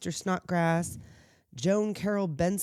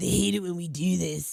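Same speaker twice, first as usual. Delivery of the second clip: rough, raspy, creaky voice. Retelling what a person in a movie said: Corey Feldman impression. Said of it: "That's my Corey Feldman impression".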